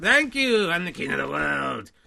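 grandiose puppet character voice. Voicing a puppet picked out of the box, the king of the world: king of the world puppet voice. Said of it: "it's a good character".

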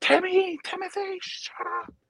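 mock very high, drawn-out hollering scream. Retelling how a neighbor screamed at a loud kid: imitating someone screaming to be quiet. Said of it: "you'd hear her like".

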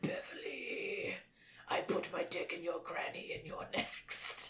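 eerie, creepy whispered ghost voice. Retelling what a ghost's voice said to Bev: creepy ghost voice. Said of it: "this really creepy ass voice is like".

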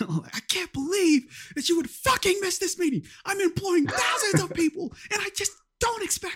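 very high, ranting, scolding yell. Retelling Tom Cruise yelling at her: Tom Cruise yelling impression. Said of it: "Tom Cruise just yelling at her".

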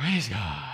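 very low, dead, flat voice with no feeling. Speaker leading a crowd mimics their weak response, imitating a feelingless response. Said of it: "that was like no feeling".

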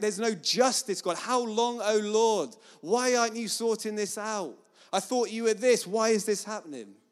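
put-on stroppy teen outburst. Describing David's worship songs as sounding like a teenage boy: mock-stroppy David impression. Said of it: "sounds more like a kind of stroppy teenage boy".

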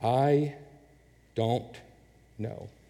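drawn out very slowly, deliberate delivery. Speaker boiling it down for listeners so they can write it down, said very slowly. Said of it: "I'm going to say this slowly".

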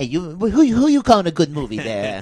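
swooping, animated wise-guy voice, pitch swinging around. Imitating Joe Pesci, challenging a co-host's words: Joe Pesci impression. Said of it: "That was my Pesci".

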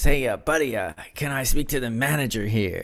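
put-on American accent, halting with uhs. Retelling dad speaking to a restaurant worker, in a put-on american accent. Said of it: "he put on his American accent".

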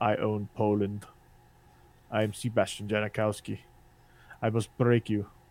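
quiet fake Russian accent. Voicing a man he is talking about, the speaker does a Drago voice. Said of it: "he actually talks like Drago".

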